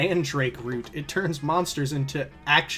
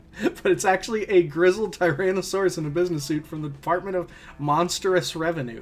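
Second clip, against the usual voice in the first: ordinary delivery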